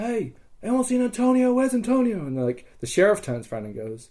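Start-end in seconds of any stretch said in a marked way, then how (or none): 0.0-2.3 mock, very high, calling-out yell. Retelling turning around while being led away, retelling a yell. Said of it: "I'm like yelling like".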